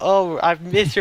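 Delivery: play-acted tearful, weeping, sobbing voice. Retelling a show scene where a character is crying: imitating someone crying.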